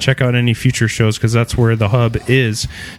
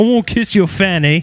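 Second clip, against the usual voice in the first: joking put-on British accent, pitched up; 6 semitones higher than usual. Joining a group bit where everyone does British accents, mock British accent. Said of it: "Everybody do British accents".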